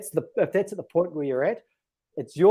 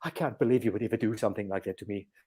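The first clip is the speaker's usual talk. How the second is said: put-on low, soft, old medieval English accent; 6 semitones lower, 6 dB quieter than usual. Retelling the lady's imagined reply to a joke phone, in an old english medieval accent. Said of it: "She's speaking in an old English medieval accent".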